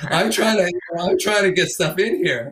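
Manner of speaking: high, loud, frustrated put-on voice.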